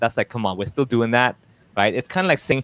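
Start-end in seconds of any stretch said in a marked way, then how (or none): none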